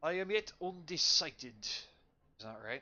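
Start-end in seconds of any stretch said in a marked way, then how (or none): 0.0-1.6 pitched-up, put-on attempt at British accent. Voicing the master character in a story, attempted British accent. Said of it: "the one time I'm trying to do a British accent".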